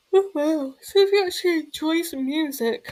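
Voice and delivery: words stretched through a yawn. Talking about favorite music, the speaker keeps yawning. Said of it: "I keep on yawning".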